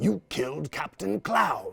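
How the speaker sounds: manic, high-pitched, raspy villain voice. Showing the voice he starts with when his son asks: Joker voice. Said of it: "the Joker voice".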